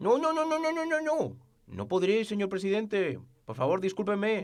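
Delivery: high-pitched, mocking, laid-on French accent. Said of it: "la burla de Macron".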